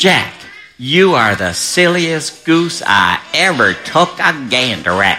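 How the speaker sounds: silly, slow, funny put-on mom voice. Storyteller shows listeners how to say the mama's line: funny mama voice. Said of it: "talk in a funny mama voice like this".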